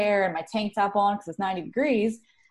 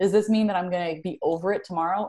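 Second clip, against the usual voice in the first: ordinary delivery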